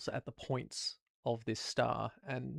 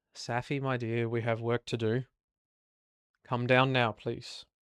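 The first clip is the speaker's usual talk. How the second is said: very stern, severe, firm, no-nonsense voice; 4 dB louder than usual. Voicing Medusa calling Safi down for work: very stern voice. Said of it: "Medusa says very, very sternly".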